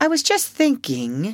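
slightly frightened voice. Peter answers Wendy's question, a little scared. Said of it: "a little scared".

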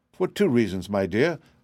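ordinary delivery

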